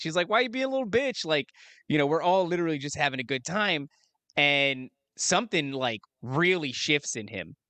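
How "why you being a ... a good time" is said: light, joking, playful teasing tone. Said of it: "really just playing".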